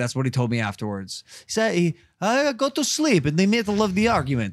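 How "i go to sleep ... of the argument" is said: failed put-on German accent, higher pitch. Retelling what a german friend said about an argument: bad german accent imitation. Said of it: "That's not a German accent at all".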